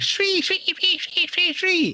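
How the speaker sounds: very high, piercing creature shriek.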